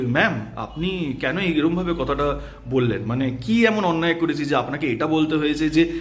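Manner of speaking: ordinary delivery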